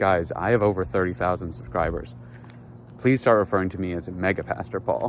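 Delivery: normal talking voice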